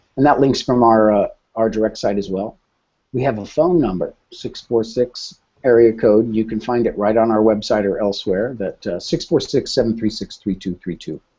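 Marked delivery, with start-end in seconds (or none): 9.0-11.0 rattled off in a rush, fast. Giving out a phone number to the audience, said fast. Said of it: "I said it so fast".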